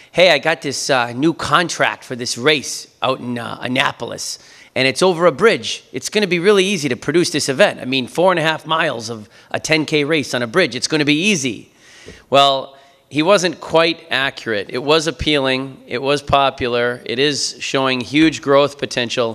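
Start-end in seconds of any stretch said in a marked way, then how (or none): 0.2-11.8 imitated Boston accent. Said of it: "so he said in his Boston accent".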